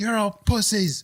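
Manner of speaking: acted-out, very high-pitched, irate, raving rant. Describing a ranting man in a bar, the speaker is retelling an irate rant. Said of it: "Just irate".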